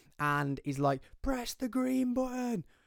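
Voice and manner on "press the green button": put-on very high, high-pitched screaming. Retelling a stage manager yelling at security, imitating a scream. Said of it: "Or screaming".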